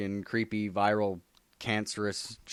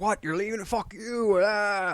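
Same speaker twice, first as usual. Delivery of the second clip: acted-out, very high-pitched, pissed-off furious blow-up; 12 semitones higher, 3 dB louder than usual. Retelling a comic where Venom gets pissed off: imitating Venom getting pissed off. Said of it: "Venom gets all pissed off".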